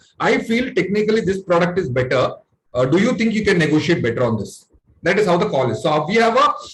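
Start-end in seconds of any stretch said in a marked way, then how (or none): none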